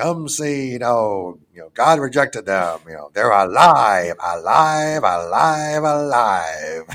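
loud, slow carnival barker voice, stretching out "alive". Retelling the sideshow barker calling people to see the oddities: imitating a carnival barker. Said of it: "the Barker that's standing there for the".

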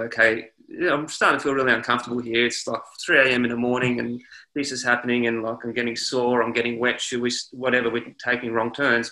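ordinary talk

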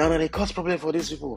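put-on shouting. Telling how a guy shouted at him during a dispute: retelling a shout. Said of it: "the guy just shouted".

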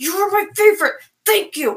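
very angry tone. Showing the habit of saying nice things in a very angry tone. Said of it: "I'll say nice things in a very angry tone".

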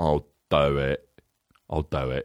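very low-pitched, slow drawl. Acting out the actor accepting a movie offer: Michael Caine impression. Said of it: "Michael Caine was just like".

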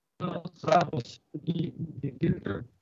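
slow, stretched, glitchy robotic voice breaking up.

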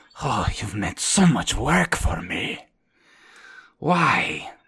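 put-on character voice with a heavy sigh. Game narrator voices Kostia addressing the party, with a deep sigh. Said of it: "You hear a deep sigh from a familiar voice".

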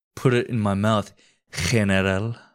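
put-on mock Japanese accent. Redoing the general's imagined line after saying he was Japanese: put-on Japanese accent. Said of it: "he was Japanese".

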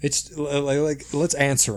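loud exasperated outburst.

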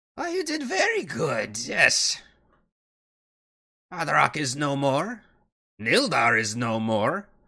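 high, swooping character voice. Grandalfa comes down from the throne room and answers the party, in Grandalfa character voice.

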